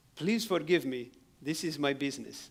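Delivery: loud broken English. Retelling what a thief said to him: imitating broken English. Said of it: "he says this in broken English".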